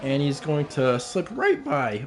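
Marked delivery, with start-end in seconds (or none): 1.0-2.1 voice cracking partway through. Commentating a race as one car slips past another, voice cracking. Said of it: "excuse the voice crack".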